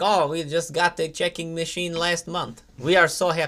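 fake, put-on Eastern European accent. Retelling what people said when someone paid by check, in a Borat accent. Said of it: "Why are you using that accent?".

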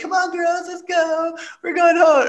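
very high, fruity, flamboyant voice.

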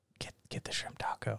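hushed, urgent, unvoiced soft whisper.

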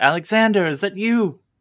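shrill, very high, very loud calling shout. A narrator voices a woman calling out to someone, shouting. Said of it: "she just shouts".

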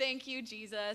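put-on tearful crying out. Retelling a mom's reaction at the announcement: imitating mom crying out thanks. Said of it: "I see my mom crying".

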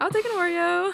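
high, loud, eager voice.

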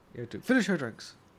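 put-on heavy, loud, scary, menacing German accent. Retelling a man's words to his friends: imitating a scary German accent. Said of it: "He said that in the most German, scary way".

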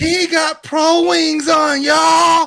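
very high, loud, top-of-the-voice yell. Retelling what a girl from the speaker's old neighborhood called out, at the top of her voice. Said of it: "at the top of her voice".

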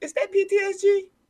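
high-pitched surprised squeal.

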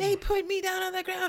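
very high, rowdy, screaming shriek. Retelling what the woman screamed at the airport police: imitating a woman screaming. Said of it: "she's just screaming".

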